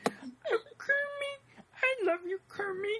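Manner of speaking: very high-pitched, very slow delivery. Explaining who voiced Muppets, imitating Miss Piggy. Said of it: "he's like".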